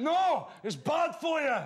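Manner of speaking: put-on Scottish accent, very high, very slow, drawn-out. Retelling a Scotsman in an Edinburgh bar answering the woman serving, Scottish accent. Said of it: "In a Scottish accent, sorry".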